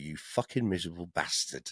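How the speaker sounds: mock mumbled aside. Retelling walking away from the organisers, retelling a mutter under breath. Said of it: "I was sort of mumbling under my breath".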